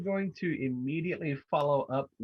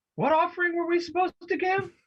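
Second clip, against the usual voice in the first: very high, shrill shouted yell; 3 dB louder than usual. A player's character runs up and yells a question at the others: yelling. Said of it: "and I'm going to yell".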